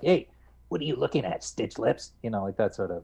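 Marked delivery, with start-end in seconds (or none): 0.0-2.1 high, rough, rasping, cranky snake-like voice. Voice actor demonstrating his game role: cranky snake-like Mudokon voice. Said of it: "a cranky sort of snake-like Mudokon. ... they raised my voice".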